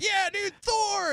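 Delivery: fired-up cheer, very high and excited.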